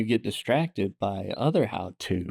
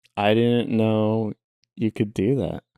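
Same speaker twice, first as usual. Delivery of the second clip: normal talking voice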